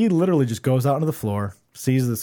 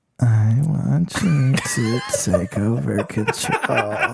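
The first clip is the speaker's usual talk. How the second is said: very slow, lingering, creepy delivery. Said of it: "You whispered those lyrics in that girl's ear?".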